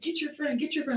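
play-acted angry screaming, very high, shrill crowd scream. Retelling how people in the taco line reacted: imitating people screaming. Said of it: "screaming at me".

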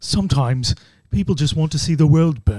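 put-on British accent. Asked to hear his Michael Caine, he does a Michael Caine impression. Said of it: "Let's hear your Michael Caine".

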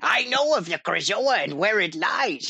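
put-on old-school video game creature voice. Imitating the character's other head turning to address the player: classic Rare game voice. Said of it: "it's classic Rare voice".

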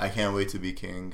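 normal talking voice

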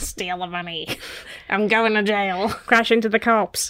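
menacing cat-like voice.

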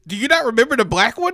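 high, fast, laughing, mocking delivery.

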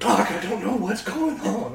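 frightened voice, fearful and lost. Telling the doctor in a scene that nothing makes sense: acting scared. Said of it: "I'm so scared".

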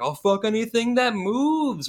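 acted Northern English accent, yelled out high. Describing a scene where a character yells, yelling as Northern English Jay. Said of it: "Northern English like version of Jay ... yelling".

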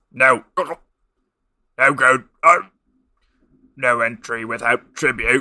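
loud, croaking frog voice, belching at line ends. Reading a story, narrator voices an unseen speaker in a croaking froglike voice. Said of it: "A voice croaked, suddenly ending each statement with something between a belch and the croak of a frog".

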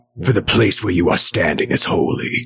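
best low, booming angel voice.

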